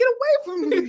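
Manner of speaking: very high-pitched lady's voice. Retelling a video where a lady on a train pushes someone away: imitating the lady on the train. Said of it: "She was like".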